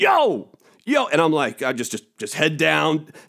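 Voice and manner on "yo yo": high, repeated hollering yell. Retelling a man by the trash who keeps yelling at him, yelling 'yo!'. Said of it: "Just keeps yelling at me".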